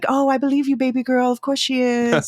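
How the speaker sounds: high, mock sweet doting tone.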